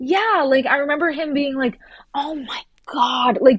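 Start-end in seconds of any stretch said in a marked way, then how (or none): 2.1-3.4 mock, sudden, angry exclamation. Retelling how he reacted to her questions: imitating an angry exclamation. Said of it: "just getting angry at her for asking him questions".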